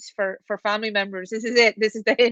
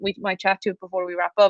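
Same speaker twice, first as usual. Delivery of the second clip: ordinary talk, nothing marked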